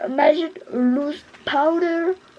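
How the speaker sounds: slow, drawn-out English accent.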